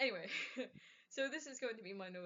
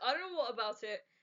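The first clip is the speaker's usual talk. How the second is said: plain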